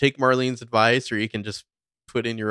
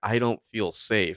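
put-on weeping, tearful and upset. Retelling a scene where a character is not taken seriously: imitating Spencer crying. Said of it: "crying and just being like".

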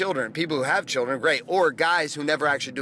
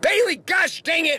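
put-on shrill yell, very high and loud; 5 dB louder than usual. The speaker retells yelling at bailey before school: retelling a yell. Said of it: "And I'm like yelling at her".

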